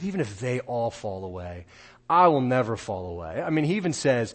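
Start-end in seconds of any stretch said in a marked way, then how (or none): 0.0-3.4 mock tone with a light touch of sarcasm. Quoting a reply to a warning: mock sarcastic tone. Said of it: "hear the sarcasm a little bit in his voice".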